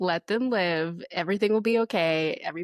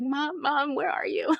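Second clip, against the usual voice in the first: put-on very high, cute small child's stuttering voice; 9 semitones higher than usual. Imitating a child looking for his mom: imitating Abel's stutter. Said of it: "it would be the cutest little stutter".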